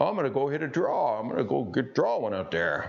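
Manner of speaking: put-on swooping, sing-song old grandpa voice. Explaining grip in a golf video, acting out his grandfather, imitating his grandfather. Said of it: "that's my grandfather's voice".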